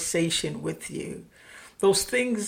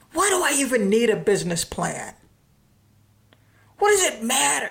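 acted-out frustrated, disgruntled tone, higher-pitched; 5 semitones higher, 4 dB louder than usual. Retelling a frustrated client's question to the speaker, mimicking a disgruntled voice. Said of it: "she asked me with this disgruntled voice".

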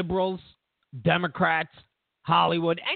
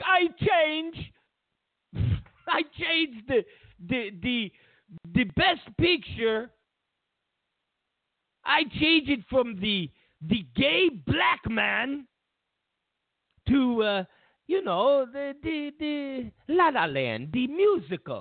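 bad Russian accent, slow, drawn-out, pitched up; 7 semitones higher than usual. Retelling a made-up scene, speaking as Putin: bad Putin imitation. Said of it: "it's a bad Putin imitation".

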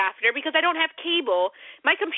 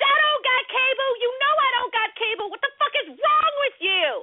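very high, full-lung put-on scream; 11 semitones higher than usual. The speaker reenacts what they yelled at work that day: retelling a full-lung yell. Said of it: "at the top of my lungs".

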